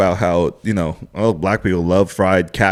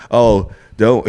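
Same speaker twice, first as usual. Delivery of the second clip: plain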